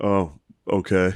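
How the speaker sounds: put-on dismissive voice. Retelling what rude bartenders said back: imitating a dismissive bartender. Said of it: "real fucking dismissive of everything I said".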